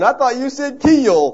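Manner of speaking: put-on Southern US accent. Retelling a man's reply after being asked if he's all right: deep Southern accent. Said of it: "this deep southern Georgia or Carolinian accent".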